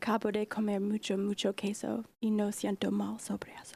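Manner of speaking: loving, romantic delivery. Reading a silly sentence in spanish on request: romantic tone. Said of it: "You've gotta do it in your most romantic tone".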